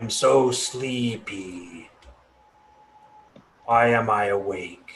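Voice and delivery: put-on creaky, aged, old-sounding tree voice. Playing a tree that has suddenly begun talking, in a creaky old tree voice. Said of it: "in a creaky old voice".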